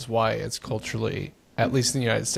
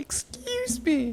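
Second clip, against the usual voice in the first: very high, slow, prim voice. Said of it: "she would go".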